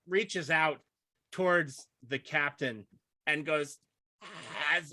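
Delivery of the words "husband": choked, gurgling, dying-sounding voice. Voicing a dying woman reaching toward the captain: gurgling dying voice. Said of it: "is gurgling, and she says".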